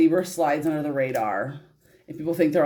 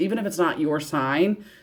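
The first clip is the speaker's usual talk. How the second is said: ordinary delivery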